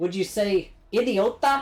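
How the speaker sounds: Irish accent on the Spanish word idiota. Trying out a spanish word in an accent: irish accent on a spanish word. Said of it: "sound like an Irish person saying a Spanish word".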